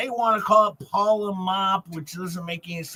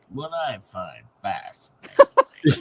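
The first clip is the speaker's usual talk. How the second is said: very low, slow, dragged-down, swooping put-on voice; 10 semitones lower, 4 dB louder than usual. Redoing the Tug impression after being told to drop the voice: lower Tug impression. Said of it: "drop your voice a little more".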